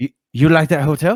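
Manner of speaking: belted, high, loud bad Chinese accent. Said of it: "I'm sorry for the bad, uh, accent".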